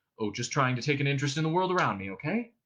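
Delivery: ordinary delivery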